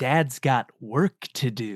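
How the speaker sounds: put-on sarcastic voice. Retelling a movie car scene, imitating Dina's sarcastic tone. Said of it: "she's being so sarcastic for the whole car scene".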